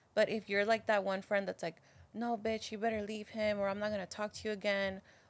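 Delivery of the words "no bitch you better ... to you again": ordinary talk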